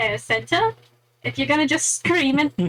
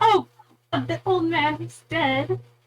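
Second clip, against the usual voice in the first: loud call projected across a room; 3 semitones higher than usual. A player's character reacts to an old man's death, shouting. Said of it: "I'm just gonna shout".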